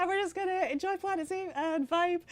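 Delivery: very high, excitable, worked-up voice. Showing the voice they have to use at work, high and excitable. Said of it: "I have to just be like up here, excitable".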